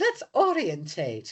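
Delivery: bad, phony, put-on British accent. Saying the word orientate while attempting a bad british accent. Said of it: "that bad British accent that you did".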